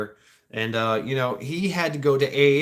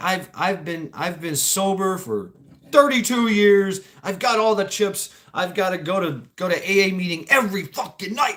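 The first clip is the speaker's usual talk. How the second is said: mad, heated, angry, pitched-up rant; 7 semitones higher than usual. Speaker retells a man in a therapy session, imitating someone angry. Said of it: "He's getting really pissed".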